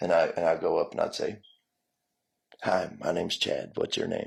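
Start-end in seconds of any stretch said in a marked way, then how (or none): 2.6-4.3 smooth, velvety, charming, slightly creaky voice. Retelling what he used to say, putting on his velvety voice. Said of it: "I put on my real velvety voice".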